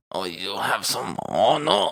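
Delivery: slow, terrible, put-on French accent. Joking about spelling honor with a u, bad french accent. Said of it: "I don't know if that was a French".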